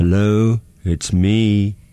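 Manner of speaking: low, acted-out, seductive sexy voice. Imitating a taxi driver on the phone, put-on sexy voice. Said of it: "That was me doing an impression of last night's sexy voice".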